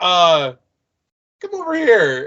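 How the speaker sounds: drawn-out, very slow, creepy call. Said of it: "I love the way he says it".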